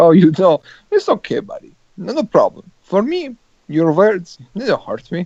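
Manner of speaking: animated football-manager voice with swooping pitch. Imagining Conte petty after Courtois spoke: Jose Mourinho voice. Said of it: "Everybody sounds like Jose Mourinho in your world".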